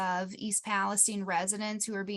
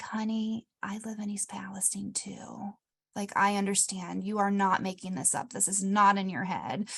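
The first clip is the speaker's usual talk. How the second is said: put-on quiet, soft-spoken voice. Retelling what the front desk worker said: imitating someone speaking quietly. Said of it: "quietly, she was like".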